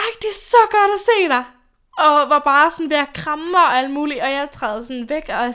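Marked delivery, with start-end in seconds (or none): 0.0-4.2 mock-thrilled girl voice, over-the-top, higher pitch. Retelling a girl who came up to them at the train, imitating wild enthusiasm. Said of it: "er sådan helt vildt begejstret".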